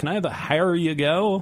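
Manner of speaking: put-on oddly Norwegian-sounding accent. Mimicking customers at the bar ordering the beer: strange Norwegian-sounding accent. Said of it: "some like strange Norwegian sounding accent".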